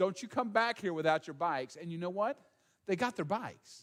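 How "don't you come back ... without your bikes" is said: ordinary talk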